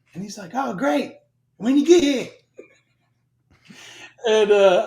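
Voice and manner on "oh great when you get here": put-on spot-on New Zealand accent, pitched up. Retelling a chat about joining Kerry's unit: imitating Kerry's accent. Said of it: "that accent spot on".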